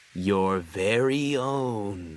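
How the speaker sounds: low, ominous, drawn-out, menacing foreboding tone. Reading a story, Percy answers Gordon's question: ominous tone. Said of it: "Percy said in an ominous tone".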